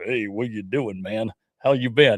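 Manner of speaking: put-on California cowboy accent. Retelling how a friend talks: imitating a California cowboy voice. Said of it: "he sounds like a California cowboy".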